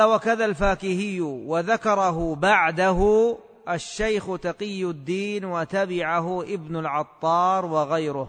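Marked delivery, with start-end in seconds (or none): none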